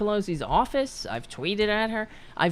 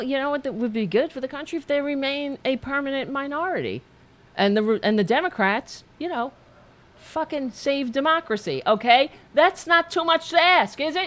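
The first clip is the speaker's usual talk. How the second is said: worked-up, heated, high-pitched rant; 5 semitones higher than usual. Speaker back on the air, ranting and flailing arms, yelling. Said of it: "I'm yelling and flailing my arms".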